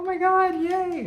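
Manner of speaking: very high, loud gleeful cheer. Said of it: "a lot of people were like".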